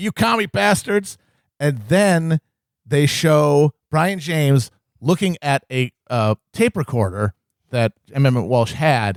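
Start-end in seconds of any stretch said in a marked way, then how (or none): 0.0-1.2 put-on high-pitched shouted yell. Retelling a movie scene of a man thrown in jail: imitating someone yelling. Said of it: "and he's yelling".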